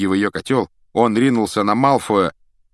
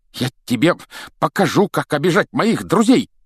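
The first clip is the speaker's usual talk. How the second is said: outright high, raised shout; 8 semitones higher than usual. A father lunges at another man and hurls him onto a bookshelf, shouting. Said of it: "крикнул он".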